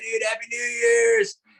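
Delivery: put-on very high drunken shout. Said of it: "They're all drunk".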